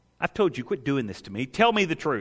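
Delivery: ordinary delivery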